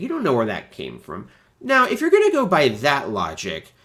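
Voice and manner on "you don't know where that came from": normal talking voice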